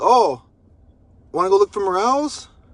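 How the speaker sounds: kind of sarcastic tone. Retelling a past reply to her comment about morels: retelling own sarcastic reply. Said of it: "I was being kind of sarcastic".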